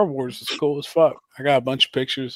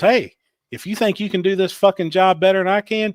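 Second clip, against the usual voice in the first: scolding tone, slightly high-pitched; 7 semitones higher, 4 dB louder than usual. Retelling what a costumed ride attendant told a friend: imitating a ride attendant. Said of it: "And said it just like that".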